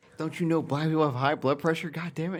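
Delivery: mock-furious raging rant. Recalling a funny scene with another speaker, imitating a raging rant. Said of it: "And just like rages out".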